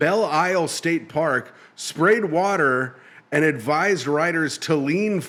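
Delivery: ordinary delivery, nothing marked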